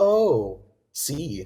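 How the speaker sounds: teasing, sarcastic, jokey tone. Retelling what she said as he grabbed her things: imitating a sarcastic jokey remark. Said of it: "in sort of a sarcastic, like, jokey way".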